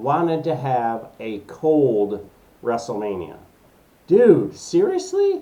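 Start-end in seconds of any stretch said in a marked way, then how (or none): 4.1-5.4 upset outburst, voice breaking and cracking very high. Reacting to WrestleMania moving from Florida to Philadelphia: voice cracking, upset. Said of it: "my voice just cracked".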